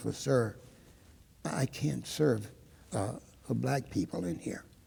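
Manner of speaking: subdued, quiet, low-key, soft-spoken delivery. Retelling what a woman finally said to him, quiet voice. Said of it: "in a quiet voice".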